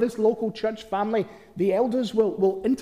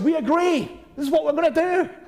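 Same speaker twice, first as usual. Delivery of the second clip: loud, pitched-up, many voices speaking together; 6 semitones higher than usual. Speaker imagining everyone at a church meeting answering together, in a loud voice. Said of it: "everyone's going to say in a loud voice".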